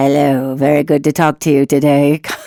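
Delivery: weird chest-and-throat voice. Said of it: "this weird ... chest and throat thing".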